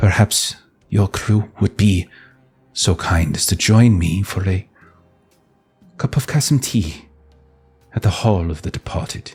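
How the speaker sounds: confidential stage whisper. Game master voicing a woman who pulls a player close and whispers. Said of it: "pulls you in and whispers".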